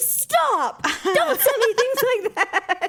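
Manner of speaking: very high, pissed-off, fed-up tone, acted out. Retelling her son's reaction to a spider video she texted: imitating Ryan, pissed off. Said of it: "so pissed".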